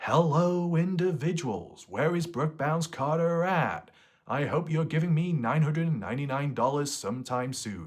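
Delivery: high, greasy, whiny, sarcastic put-on voice. Describing a greasy character, then voicing him: whiny, sarcastic character voice. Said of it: "a greasy individual with a whiny voice at times, very sarcastic tone".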